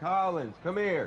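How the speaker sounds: very high, loud hollered call. Calling out to collins, hollering. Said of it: "I didn't mean to holler in your ear".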